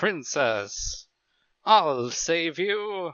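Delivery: wavering, warbling mock voice. Taking turns doing voices with the others, warbly put-on voice. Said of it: "Kind of that warbly-".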